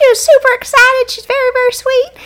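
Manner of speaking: very high-pitched country way of talking. Imitating a former coworker from the country: imitating Amber. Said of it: "She kinda always talked like this".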